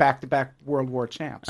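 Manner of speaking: ordinary delivery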